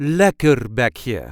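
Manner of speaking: light stress on first syllable lek of lekkerbekje. Showing how to pronounce a dutch word: light stress on lek. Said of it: "There is a light emphasis on the first part".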